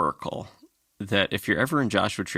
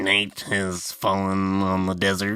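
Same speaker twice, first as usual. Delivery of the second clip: ominous, spooky, crotchety hermit-naturalist narrator voice. Imitating a radio show opening line: imitating a crotchety hermit naturalist. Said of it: "him going".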